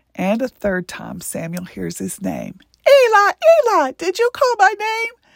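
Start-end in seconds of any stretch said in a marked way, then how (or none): 2.9-5.1 very high, squeaky puppet voice. Narrating a Bible story, the boy calls out to Eli in an Elmo voice. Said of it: "almost identical to the Muppet Elmo".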